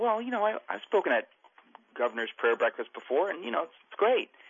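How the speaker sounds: high-pitched, unexcited, dutiful, shrugging tone.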